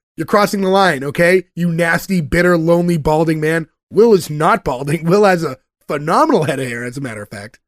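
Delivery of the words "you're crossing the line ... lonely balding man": ordinary talk, nothing marked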